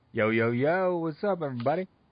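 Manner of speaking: put-on American accent. Told to say what up on comms, the co-host greets everybody in a fake American accent. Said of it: "I don't know why I tried to sound American".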